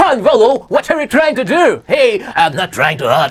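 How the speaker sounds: imitated, fake, put-on American accent. Teacher telling students how a man in the story used to talk, in a put-on American accent. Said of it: "बोलता ऐसे था".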